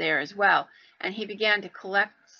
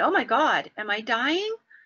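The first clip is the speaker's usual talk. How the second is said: slow, mock hysterical, distraught, upset cry; 3 semitones higher than usual. Retelling a voice heard over the radio in the ambulance, mock-hysterical and upset. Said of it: "Like very hysterical and upset".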